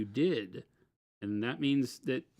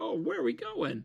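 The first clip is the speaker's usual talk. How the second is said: mock eager, high, thrilled, excited voice; 7 semitones higher, 5 dB quieter than usual. Acting out someone's reply to news of a company trip: imitating someone excited. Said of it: "he gets all excited".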